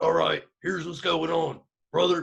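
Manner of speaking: rough, creaky wrestling-promo voice. Imitating Alex Jones, who sounds like a wrestler: Alex Jones impression. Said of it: "Alex Jones is just like".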